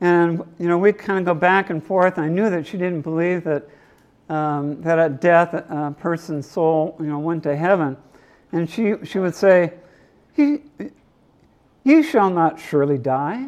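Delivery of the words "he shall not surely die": put-on very slow, sing-song, lilting Irish accent. Recounting what a woman used to say during their back-and-forth debates: Irish lilt. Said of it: "in her Irish lilt".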